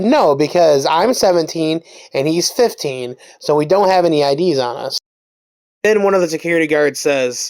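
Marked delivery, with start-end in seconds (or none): none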